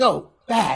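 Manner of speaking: stern, loud, high scolding yell. Retelling how a chat bot responds to a viewer: imitating someone yelling. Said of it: "is like yelling at him".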